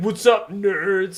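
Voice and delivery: schoolyard bully jeering voice. Retelling how an older kid on a bike taunted them: stereotypical bully voice. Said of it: "very stereootypically, just be like".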